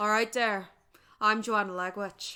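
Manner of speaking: unpolished, practiced put-on Irish accent. Showing off an Irish accent practiced for work, put-on Irish accent. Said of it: "I've been working on my Irish accent for work".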